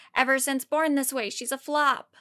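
usual speaking voice

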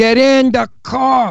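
put-on, barked Brooklyn tough-cop accent. Retelling a movie role as a cop arresting a girl, yelling in a brooklyn accent. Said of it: "with a Brooklyn accent".

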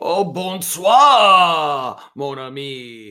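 put-on French accent. Called on to join as co-host, French Uncle [name] greets his friend in a French accent. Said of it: "you're French now".

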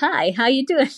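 casual put-on American accent, high-pitched. Asked to try one, an Irish speaker does an American accent. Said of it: "You want me to do an American?".

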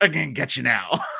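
put-on low, campy, ridiculous old-time villain voice. Describing a villain tightening one side of his mouth: ridiculous old villain voice. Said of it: "like the most ridiculous old villain thing".

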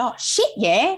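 put-on thick, broad, very strong Australian accent. Retelling Kerry's answer to Bruce McAvaney in an interview at the World Indoors, Kerry's really Australian accent. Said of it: "in really Australian accent".

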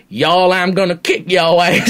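loud, belted-out wrestler voice. Imitating Brock Lesnar's actual voice: Brock Lesnar voice. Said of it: "his voice is actually like".

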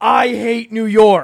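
loud, high villain-wrestler scream. Describing a villain wrestler yelling at a crowd: mock wrestler scream. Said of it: "screams into the microphone".

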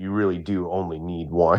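mock mutter under the breath. Imagining a man sitting in his booth, imitating muttering under his breath. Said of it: "like under his breath".

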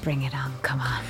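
hushed, very quiet, barely audible whisper. A player voices their character's words in the game: whisper. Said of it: "I whisper".

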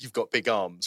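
ordinary delivery

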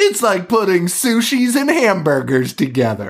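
high, dramatic movie trailer narrator voice. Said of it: "It has a narrator that's like".

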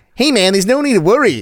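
put-on American accent. Imagining americans standing around a cat, imitating americans. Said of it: "all the Americans around this twenty million dollar cat going".

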